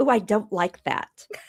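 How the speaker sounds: ordinary talk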